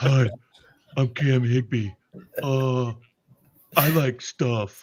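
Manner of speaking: mocking, put-on cartoon character voice. Mocking a person by imitating him: mocking Cam Higby cartoon voice. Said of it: "talks like a cartoon character".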